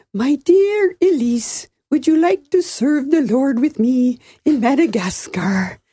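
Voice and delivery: put-on sing-song, lilting Scandinavian accent. Quoting grandpa proposing to grandma, in a Scandinavian lilt. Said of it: "that kind of Scandinavian lilt".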